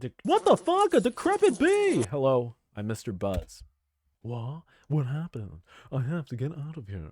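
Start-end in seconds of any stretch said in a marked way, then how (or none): 4.2-7.1 voice of a talking cat character. Voicing the cat after the bee character Mister Buzz: cat character voice. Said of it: "That's a good voice for the cat".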